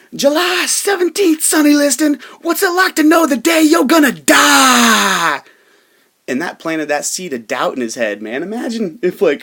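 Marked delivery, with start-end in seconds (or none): 0.2-5.4 very loud, shrill, screaming taunt with "die" drawn out. Retelling how Muhammad Ali taunted Sonny Liston through a window, retelling Muhammad Ali's screaming. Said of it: "he screamed at me through my living room window".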